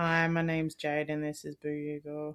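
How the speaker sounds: sad, downcast delivery. Host gives the show's introduction, sounding sad. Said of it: "You just sound sad".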